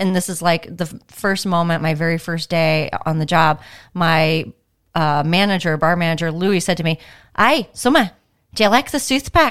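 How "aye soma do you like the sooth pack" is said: put-on "south" pronounced "sooth", high pitch, regional accent. Recalling your first day on the job, repeat your bar manager's baffling question, imitating Louis. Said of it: "I can only imitate what I heard".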